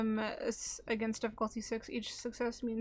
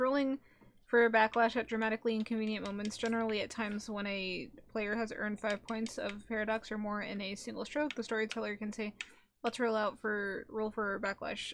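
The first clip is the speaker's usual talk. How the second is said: plain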